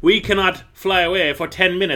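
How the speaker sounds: high-pitched, terribly proper monster voice. Recapping an action scene, voicing the centipede-like monsters, in a Taxon voice. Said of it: "Is that a Taxon voice? Is that a centipede voice?".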